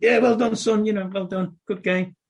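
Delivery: goes high and squeaky. Retelling how a childhood hero spoke while shaking hands, in a squeaky Alan Ball voice. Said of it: "he had a squeaky voice".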